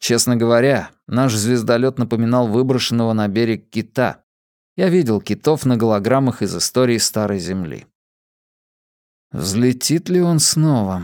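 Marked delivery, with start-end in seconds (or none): 9.3-11.0 muttered, much slower. Narrator, staring at the stranded starship while breaking up chocolate, muttered. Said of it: "пробормотал я".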